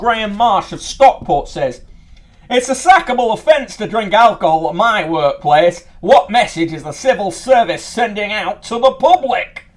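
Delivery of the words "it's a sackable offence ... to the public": put-on Yorkshire accent. Reading out a letter from a reader: yorkshire accent. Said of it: "that's more of a Yorkshire accent".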